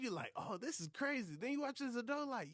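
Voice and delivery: amused, incredulous, excited, pushed high-pitched voice.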